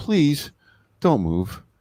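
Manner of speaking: mock near-begging plea, high-pitched. Retelling a film line the character almost begs: imitating a begging plea. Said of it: "he almost begs".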